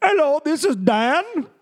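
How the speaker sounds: very high, put-on Indian accent. Imitating guys from India introducing themselves by a fake name, in a put-on Indian accent. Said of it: "the guys from India come go".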